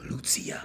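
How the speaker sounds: breathy, hushed whisper. Describing how people say the name out loud: whispered Lucia. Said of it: "gotta whisper that shit, like".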